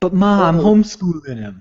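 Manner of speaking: put-on New Jersey accent. Quoting the tough mom from the movie they're watching, Jersey accent. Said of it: "Jersey accent Mom".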